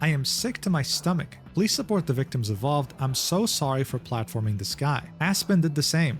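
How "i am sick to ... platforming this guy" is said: ordinary talk, nothing marked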